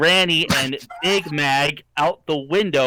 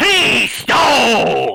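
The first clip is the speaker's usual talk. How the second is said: pirate voice, higher and louder; 7 semitones higher, 5 dB louder than usual. Reading one line of a story aloud as asked: pirate voice. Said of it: "Read one line of dialogue as a pirate".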